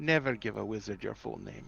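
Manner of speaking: muttering under breath. Voicing a character who smiles and mutters: muttering under his breath. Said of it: "under his breath goes".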